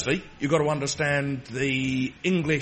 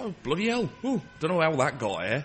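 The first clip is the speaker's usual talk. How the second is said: slipping, inconsistent fake Yorkshire accent; 3 dB quieter than usual. Telling a joke, speaking as the Yorkshireman to the doctor, wandering put-on Yorkshire accent. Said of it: "I don't know where the fuck this accent's going".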